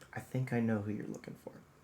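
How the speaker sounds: quiet, confiding, soft hushed tones. She pulls you a little closer and speaks in hushed tones. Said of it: "in hushed tones".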